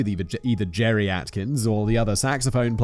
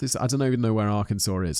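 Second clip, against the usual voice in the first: normal talking voice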